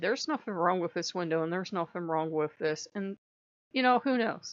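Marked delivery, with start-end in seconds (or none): none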